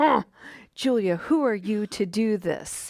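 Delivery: mock scoffing, dismissive, skeptical and doubting tone. Imitating an inner voice with arms crossed questioning her: skeptical inner critic. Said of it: "they've kinda got their arms crossed".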